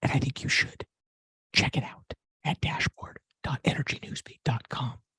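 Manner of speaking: breathy whisper with emphasis. A host closing a news show tells listeners where to look; whispering. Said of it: "I'm whispering because it's it's important".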